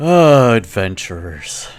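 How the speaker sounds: amused, chuckling, talking through laughter. A barkeep reacts to adventurers who just got here, laughing. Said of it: "The barkeep laughs".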